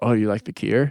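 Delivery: put-on thick Scottish accent. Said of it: "thickest Scottish accent you ever met".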